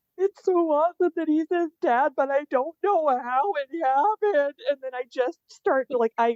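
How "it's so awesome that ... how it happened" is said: put-on high, sobbing words forced out through tears. Retelling what was said through tears while watching a show: imitating own crying speech. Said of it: "just all these tears come out".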